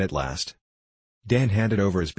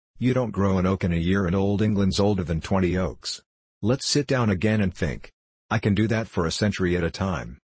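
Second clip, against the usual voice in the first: usual speaking voice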